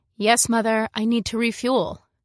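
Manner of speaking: ordinary delivery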